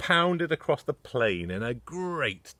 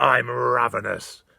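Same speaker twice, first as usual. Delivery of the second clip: loud, rough, gritty roaring dinosaur voice; 5 dB louder than usual. Reading a dinosaur story aloud, Ty roaring his line. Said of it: "roared Ty".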